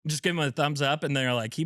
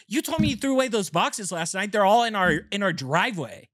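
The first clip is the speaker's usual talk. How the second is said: acted-out exasperated, scolding, yelling complaint; 5 semitones higher than usual. Retelling his wife waking him one morning, imitating Jill yelling. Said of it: "Why are you yelling at me?".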